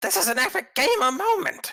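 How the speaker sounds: loud, very high, shrill wizard voice. Asked to redo the voice he did for the wizard, speaker uses wizard voice. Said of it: "do you mind doing the uh the voice that you did for the uh, the wizard".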